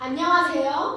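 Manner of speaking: put-on prettified, cutesy, sweet voice. Showing off a talent, the speaker greets everyone in a put-on pretty voice. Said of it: "목소리도 이렇게 예쁘게 낼 수 있고요".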